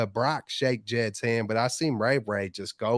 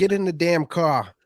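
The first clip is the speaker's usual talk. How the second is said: poor put-on Boston accent, pitched up; 6 semitones higher, 4 dB louder than usual. Speaker tries the accent after being told to step it up: bad boston accent. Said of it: "especially with that accent".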